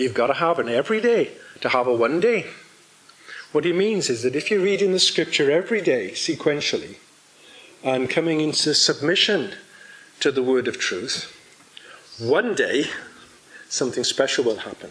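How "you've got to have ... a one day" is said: put-on Northern Irish accent, Belfast style. Quoting a saying of a pastor from Belfast, in [name]'s Northern Ireland accent. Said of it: "excuse my Northern Ireland accent".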